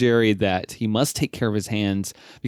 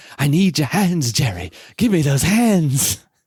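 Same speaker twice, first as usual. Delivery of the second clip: high, creepy, wheedling character voice; 5 semitones higher, 4 dB louder than usual. Retelling how a brother went around quoting a show's ending: imitating a creepy character voice. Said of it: "he would impersonate the voice and everything".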